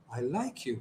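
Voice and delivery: very soft, gentle, hushed, pitch falling. Showing voice matching words and body language: soft, falling tone. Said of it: "You see that my tone is going down".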